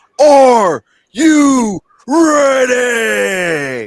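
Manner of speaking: loud, high call, "ready" drawn out. Reading a viewer's line aloud to the stream: Triple H voice. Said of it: "in my Triple H voice".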